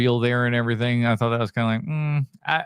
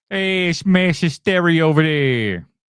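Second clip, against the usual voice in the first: botched put-on Massachusetts accent, pitched up; 5 semitones higher, 4 dB louder than usual. While telling of the Salem witch trials, break into a bad Massachusetts accent. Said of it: "I can do a better Massachusetts voice than that".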